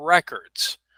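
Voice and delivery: records with the re- syllable emphasized. Explaining the noun use, stress on first syllable of records. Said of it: "we would emphasize the beginning of the word".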